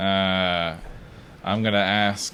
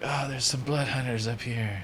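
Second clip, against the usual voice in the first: hushed half-whisper; 5 semitones higher, 4 dB quieter than usual. Playing a role in a group game, half-whispering to the others. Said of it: "and I'll whisper".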